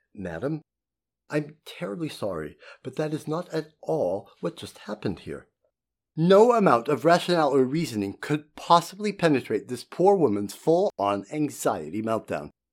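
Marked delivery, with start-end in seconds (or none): 0.2-5.5 calmest possible voice, soft and very calm. Recounting answering an accusing woman during her meltdown, retelling a very calm voice. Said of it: "in the calmest voice I could possibly muster".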